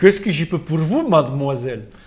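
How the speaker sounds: put-on French spoken with a very heavy Russian accent. Speaker delivers the line as instructed, in a heavy russian accent. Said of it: "Avec un accent prononcé, russe, très russe".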